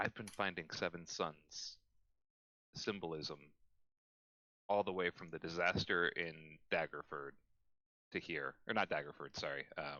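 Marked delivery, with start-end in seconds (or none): 0.0-8.5 speaking low and cautiously, lowered voice. A player speaks in character, out of caution, in a lowered voice. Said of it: "Claude lowers his voice".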